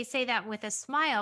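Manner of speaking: plain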